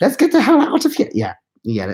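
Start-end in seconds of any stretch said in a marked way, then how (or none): 0.0-1.1 very high put-on German accent. Recalling a movie scene, the speaker quotes a storming skeleton, in a German accent. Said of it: "one of them has a German accent for like absolutely no reason".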